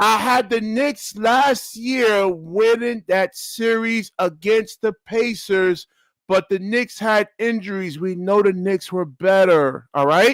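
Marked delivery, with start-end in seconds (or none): 0.0-8.0 slow, deliberate, spelled-out, word-by-word pace. Arguing about last year's series with another speaker: speaking slowly. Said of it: "Let me say this slowly to you".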